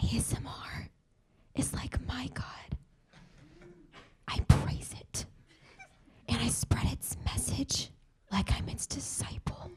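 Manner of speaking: soft whisper all the way through. Answering a talk show host's welcome on stage: whispering. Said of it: "I physically can't speak in a normal volume".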